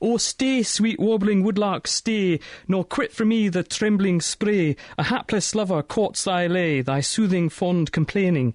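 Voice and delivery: terrible put-on Scottish accent, slow. Telling a story, voicing a patient in a bed in a terrible Scottish accent. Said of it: "my terrible attempt at Scottish accent".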